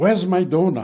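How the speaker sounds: put-on French accent. Retelling what his fellow driver said after a coffee stop: French accent. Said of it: "in his French accent".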